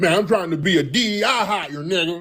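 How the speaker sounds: mock heavy slang speech. Mocking how political talk would sound in heavy slang: mocking heavy slang talk. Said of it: "We don't talk like that when we talk in politics".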